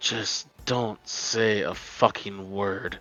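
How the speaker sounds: barely audible, very faint, low growling voice. Voicing someone speaking from the bed, in a very faint growling voice. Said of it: "very faint, kind of like growling voice".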